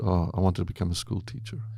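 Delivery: put-on muttering under breath. Retelling what a girl said once her dream was shot, mumbled under breath. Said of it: "just under her breath just said".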